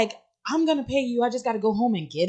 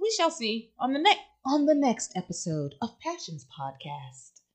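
put-on radio announcer voice, quieter; 6 dB quieter than usual. Signing off the podcast episode in a radio announcer voice. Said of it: "I like your radio voice".

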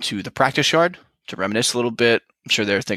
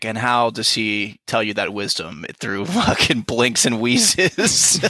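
play-acted, spoken through a chuckle. Retelling a character's mocking reply: imitating a chuckling retort. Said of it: "Daemon kinda just chuckles and is like".

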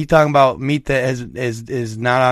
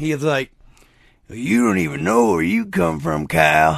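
put-on raspy old voice, higher and slower; 3 semitones higher than usual. Retelling a late-night talk with his uncle, the speaker quotes him in Uncle Charlie's raspy old voice. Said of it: "in his old raspy-ass voice".

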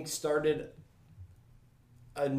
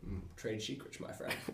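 put-on low, soft purring voice. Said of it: "That was not a bad Sean Connery impersonation".

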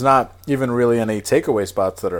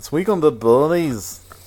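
put-on Scottish accent, higher pitched; 5 semitones higher than usual. After an earlier try, the speaker says the phrase again in an okay Scottish accent. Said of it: "That's an okay Scottish".

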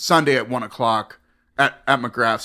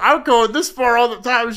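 mock tearful crying voice, higher pitch; 11 semitones higher, 3 dB louder than usual. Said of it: "She's, like, crying".

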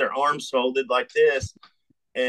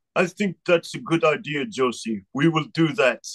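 put-on Israeli accent with tough special-forces military style. After a long silence, the speaker quotes Lior Cohen in his Israeli special forces voice. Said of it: "he's got this Israeli special forces voice".

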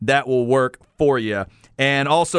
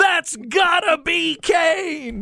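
put-on announcer scream, higher. Retelling an announcer's call: imitating Jim Ross screaming. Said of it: "when he starts screaming".

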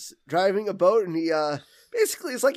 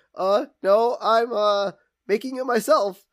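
put-on nervous character voice, much slower; 3 semitones higher, 3 dB louder than usual. Retelling a scene where Burns answers Homer's coffee offer, imitating nervous Mr. Burns.

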